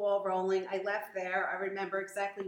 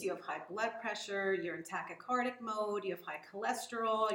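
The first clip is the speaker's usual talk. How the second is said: normal talking voice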